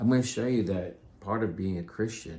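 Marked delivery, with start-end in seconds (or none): none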